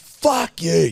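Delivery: high, screamed, angry cursing outburst. Retelling screaming to himself in his car after a caller: retelling own screaming. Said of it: "I'm just screaming "fuck" in my car".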